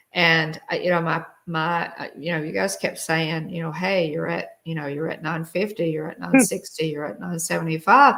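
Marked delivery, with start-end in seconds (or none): none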